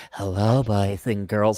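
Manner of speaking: put-on very low, soft kids'-show style voice. Mocking how a children's TV host greeted kids: Mister Rogers voice. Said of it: "he had to talk like that 'cause they're little kids".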